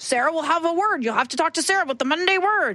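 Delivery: western cowboy character voice, pitched high. Voicing a character he turned into a cowboy, in a cowboy voice. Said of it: "I turned him into a cowboy".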